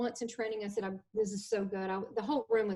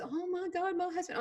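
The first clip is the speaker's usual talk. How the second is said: put-on high tearful sobbing, words barely getting out; 9 semitones higher than usual. Retelling a crying woman's words about her husband: imitating someone crying. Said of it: "she couldn't even get it out".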